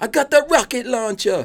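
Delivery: put-on Jamaican accent, pitched very high. Showing how the line should be said: jamaican accent. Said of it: "You gotta say it with a Jamaican accent".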